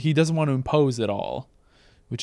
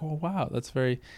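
timid, shy, polite put-on voice, higher and quieter; 3 semitones higher, 5 dB quieter than usual. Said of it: "he's so shy and so polite about it".

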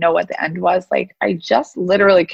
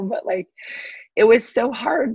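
a little emotional, voice catching, choked up; 4 semitones higher than usual. Recalling a hard time of believing in oneself, getting a little emotional. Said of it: "You can tell I'm getting a little emotional".

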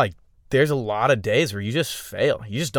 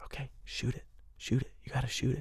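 whisper, quieter; 14 dB quieter than usual. Retelling a guide's words to a hunter at the shot: imitating a whisper. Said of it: "I'm whispering in their ear".

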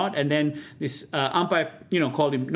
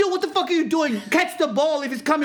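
high, shrill, yelled outburst; 12 semitones higher than usual. Retelling beach cricket with mates, imitating John yelling. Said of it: "just fucking yelled at me going".

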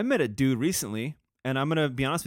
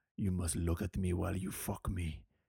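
bad fake Russian accent, very low and hushed; 7 semitones lower, 8 dB quieter than usual. Joking about Russian girls, putting on a bad Russian accent. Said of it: "That was a horrible".

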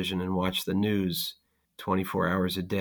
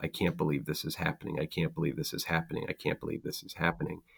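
soft, quick, absent-minded muttering, repeated over and over; 3 semitones lower, 7 dB quieter than usual. Retelling repeating a phrase while loading the dishwasher, in a soft voice. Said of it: "saying over and over in a soft voice".

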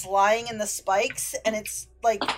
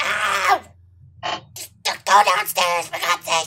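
mock pained yelp, crying out; 4 dB louder than usual. Game master voicing a character just hit by a crossbow shot; crying out in pain. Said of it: "he cries out in pain".

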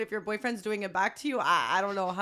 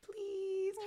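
put-on very high, cutesy, pleading baby talk; 10 semitones higher, 10 dB quieter than usual. Showing how to beg for something: put-on baby voice. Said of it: "baby voice is, like, when I really want something".

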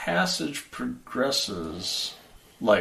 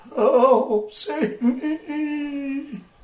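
very high-pitched, desperate, begging, pleading voice. Narrating the scene, mouths in the wall plead in Abigail Rhodes' voice. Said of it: "the mouths are talking and pleading in Abigail Rhodes' voice".

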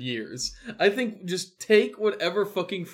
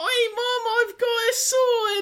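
put-on child voice, dickensian style; 5 dB louder than usual. Voicing a Bluey line with the only child accent available: Dickensian child accent. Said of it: "all I've got is Dickensian child".

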